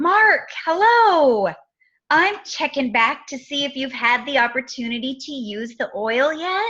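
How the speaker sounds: enthusiastic, excited, eager voice. Demonstrating how to phone someone back about their order, with an excited voice. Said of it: "hear the excitement in your voice".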